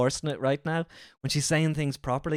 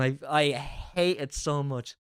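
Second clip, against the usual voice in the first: ordinary talk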